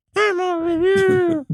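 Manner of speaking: high light woman's voice. Retelling hearing a voice in the woods: imitating a really high, light woman's voice. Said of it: "It was really high".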